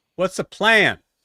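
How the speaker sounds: high, booming, very loud shout. Voicing a townsperson calling out a question: shouting out from a crowd. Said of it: "shouts out".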